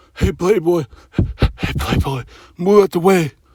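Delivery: whispered softly and close. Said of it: "He ain't gonna whisper in your fucking ears".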